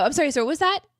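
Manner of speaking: confused tone. Acting out a drive-thru worker failing to understand a water order: imitating a confused drive-thru worker. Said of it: "Hearing him order water at the drive-thru".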